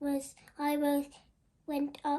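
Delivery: ordinary delivery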